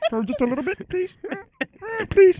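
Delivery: very high-pitched, put-on puppet character voice. Asking for stomach to be brought over: put-on voice like Bert or Ernie. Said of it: "What voice are you doing?".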